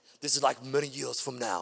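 worst-ever put-on Scottish accent, low voice. Reading a call to fight, likening it to a film speech: bad Braveheart accent. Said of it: "That's the worst accent ever".

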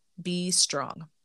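ordinary delivery

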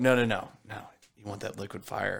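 put-on, dramatic whisper. Retelling a masked guy offering drain cleaner: imitating a dramatic whisper. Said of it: "Was he whispering this whole time?".

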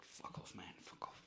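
angry, embarrassed, whispered delivery. Retelling how Maddie ran away embarrassed: imitating Maddie's angry telling-off. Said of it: "she's angry".

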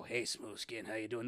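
put-on smoker-voiced ghoul. Describing game ghouls greeting humans, doing a ghoul smoker's voice. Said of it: "They sound like they have a smoker's voice".

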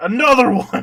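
put-on angry, fed-up, furious, loud, high-pitched outburst. Retelling a fight scene where the fighter's clothes are ruined: imitating a furious Tao. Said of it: "And he's fucking pissed".

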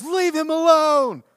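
very high, shrill, loud yell. Retelling what a girl yelled from her car window: imitating someone yelling. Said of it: "and starts yelling".

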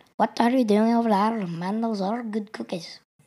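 put-on Irish-accented voice. Asked to do an Irish accent, the speaker improvises a line, Irish accent. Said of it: "Can you do an Irish accent".

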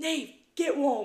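put-on loud high shout. Retelling a moment from a match: imitating a shout. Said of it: "shouts out".

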